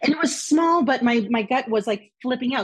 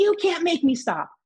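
mock yelling, high-pitched and loud; 6 semitones higher than usual. Retelling a phone call, quoting his reply and imitating his yelling. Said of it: "I tell him to stop yelling at me".

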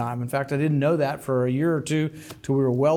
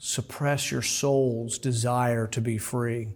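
slow, calm, lulling, gentle, soothing woman's voice; 3 semitones lower, 4 dB quieter than usual. Retelling what drones in China told people: imitating a soothing woman's voice. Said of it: "in the soothing voice of a woman".

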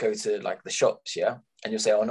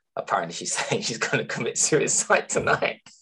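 talking with words broken up by laughter. Answering a question about their mum, laughing while talking. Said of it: "Why are you laughing?".

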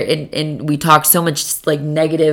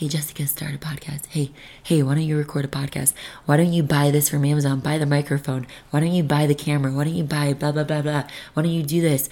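put-on whisper, much quieter; 8 dB quieter than usual. Retelling how their subconscious first nudged them, whispering as the inner voice. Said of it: "First it whispers a little bit".

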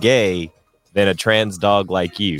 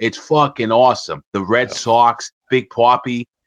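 mock Boston way of talking. Asking how a Boston mayor has no accent, then: Boston accent. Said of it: "you don't talk like this?".

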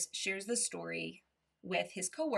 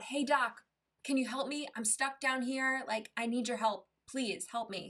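acted earnest, mild, urgent pleading tone; 4 semitones higher than usual. Retelling the man in the hole calling to a doctor: retelling a shout for help. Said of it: "the guy shouts out".

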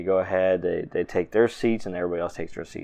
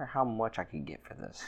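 muttered under breath, higher and quieter; 3 semitones higher, 10 dB quieter than usual. Voicing Captain Roberta eyeing a fork at the table: muttering under her breath. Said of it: "mutters underneath her breath and goes".

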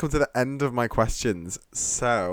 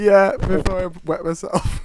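high, loud, laughing through the line; 8 semitones higher, 5 dB louder than usual. Wrapping up an episode of Safe House, dissolving into laughter. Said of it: "as the host sort of descends into a chaos of laughter".

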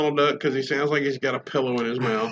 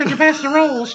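very high put-on cartoon voice; 12 semitones higher, 3 dB louder than usual. Imagining Mickey Mouse asking at dinner, in Mickey Mouse voice. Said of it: "I would have to strangle him with that voice".

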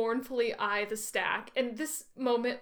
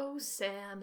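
very soft put-on voice, much quieter; 2 semitones lower, 7 dB quieter than usual. Retelling a scene from the book, the speaker does Frodo's line in his softest voice. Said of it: "in his softest voice".

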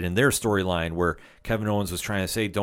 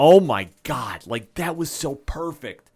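thrilled, loud, high-pitched excited yelling; 6 semitones higher, 5 dB louder than usual. Reacting to a wrestling moment the crowd exploded at: excited yelling. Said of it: "I apologize for yelling in the mic there".

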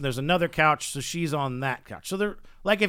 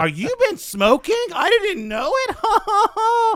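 mock childish voice, higher and louder; 7 dB louder than usual. Retelling the woman's question: imitating a childlike delivery. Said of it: "This is a grown woman".

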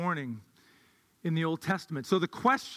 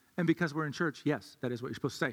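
usual speaking voice

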